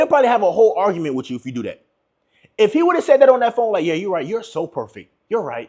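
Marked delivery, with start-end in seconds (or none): 3.8-5.7 soft, smart-mouthed, condescending put-on sarcasm. Showing how a man might have answered a woman on the phone, condescending, smart attitude. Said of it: "condescending with a smart attitude".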